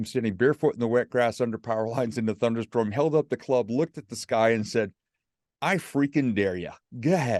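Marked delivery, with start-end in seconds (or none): 5.6-7.4 mocking, sarcastic, taunting tone. Retelling standing under power lines in a thunderstorm, daring the sky: retelling a sarcastic dare. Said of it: "being sarcastic, not mad at God".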